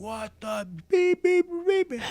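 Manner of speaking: put-on shrill, very high, furious screaming and yelling. Retelling a gas station worker coming out after a crash: imitating screaming and yelling. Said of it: "comes out screaming and yelling".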